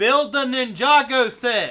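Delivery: slow all-caps bellow, very high and very loud. Reading out a viewer's all-caps chat message: imitating an all-caps yell. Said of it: "It's 'cause it's in all caps".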